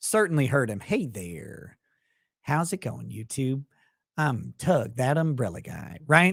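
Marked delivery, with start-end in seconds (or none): 0.8-6.0 relaxed, casual, easy drawling voice. Showing the sound of a co-host's golden voice: Tug's casual drawl. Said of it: "that casual drawl".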